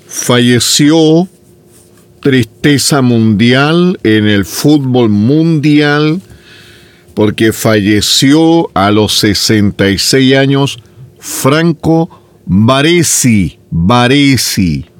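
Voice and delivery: slow, drawn-out delivery.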